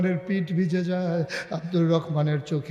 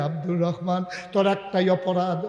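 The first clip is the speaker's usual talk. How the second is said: usual speaking voice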